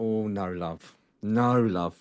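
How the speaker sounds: put-on soft, very slow, very English accent. Retelling a lady in the audience's reply, the speaker imitates her very english accent. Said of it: "In a very English way".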